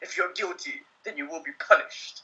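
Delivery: hushed movie trailer announcer voiceover. Recalling an eighties movie trailer guy's line, in a movie trailer voice. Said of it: "you got that typical trailer voice".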